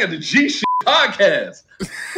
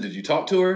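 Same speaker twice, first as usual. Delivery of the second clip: ordinary talk, nothing marked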